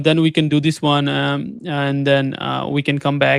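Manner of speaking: hesitant, halting speech full of ums and uhs.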